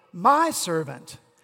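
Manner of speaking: heavy emphasis on the word "my". Rereading the line with the emphasis moved, stress on my. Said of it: "When we put the emphasis on the word my".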